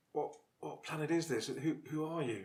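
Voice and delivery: weak, despairing voice. Player character, just arrived on a planet, answers the strangers in a very weak, despairing voice. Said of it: "I'll say in a very weak and despairing voice".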